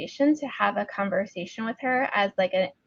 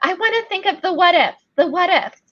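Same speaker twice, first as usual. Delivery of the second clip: high-pitched, loud mocking voice. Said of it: "everybody started asking".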